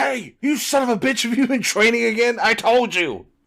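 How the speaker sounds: very high, rough, loud yell. Acting out a comic-book character scolding a friend for training: imitating a character yelling. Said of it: "yelling at him for training".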